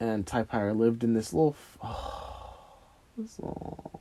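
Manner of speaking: emotional, choked-up voice, words catching and breaking. Recalling old housemates, getting emotional and choked up. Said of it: "I'm so sorry for getting emotional".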